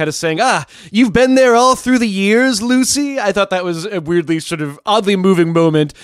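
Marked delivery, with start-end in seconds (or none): 0.4-3.2 peculiar high-pitched drawl, drawn out like a shout. Retelling a phone call scene: David Lynch's peculiar shouting drawl. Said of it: "in his very peculiar shouting drawl".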